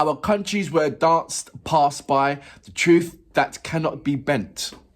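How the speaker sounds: ordinary talk, nothing marked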